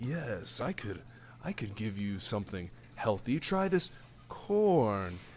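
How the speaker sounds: low, soft, sinister voice with a tempting tone.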